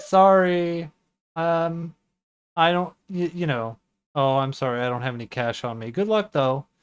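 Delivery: fake apologetic, dismissive tone. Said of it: "like a door-to-door salesman".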